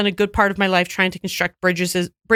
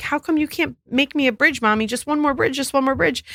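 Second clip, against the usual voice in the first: put-on acted, high, tearful, pleading voice of upset little boy; 6 semitones higher than usual. Retelling a three-year-old begging his mother for one more bridge: imitating an upset crying child. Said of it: "he was super upset and crying, like".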